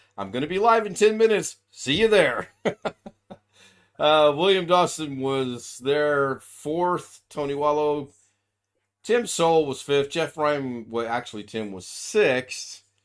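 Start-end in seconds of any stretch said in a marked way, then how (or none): 0.2-2.5 higher, louder, bright, upbeat announcer voice. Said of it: "I would send an email going".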